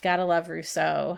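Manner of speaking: dry, sarcastic tone. Reacting to views just quoted from rousseau: sarcastic. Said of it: "you can hear my sarcasm there".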